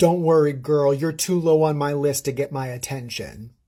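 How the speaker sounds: ordinary talk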